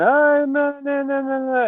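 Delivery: very high, slow, drawn-out sobbing whine. Retelling a story scene where she pleads, imitating crying and whining. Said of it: "she's crying and whining".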